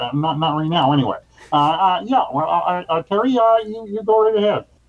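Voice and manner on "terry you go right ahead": put-on frog puppet voice, higher. Host handing over to his guest, Kermit the Frog voice. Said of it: "I'm doing Kermit the Frog here".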